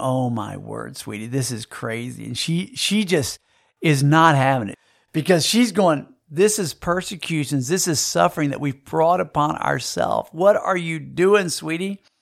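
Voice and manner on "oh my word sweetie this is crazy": mock, soft chuckling through words. Retelling what they said beside her on a shaking plane, retelling laughing while talking. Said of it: "And I'm kind of laughing".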